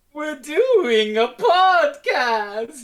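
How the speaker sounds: shrill, very high, loud, booming anime villain voice. Introduced as co-host of a podcast, the speaker sounds like an anime villain. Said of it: "you just sound like an anime villain".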